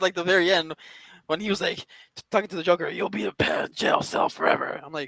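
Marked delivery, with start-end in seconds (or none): 2.9-4.8 slow, drawn-out, raspy and rough voice. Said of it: "other than his raspy voice".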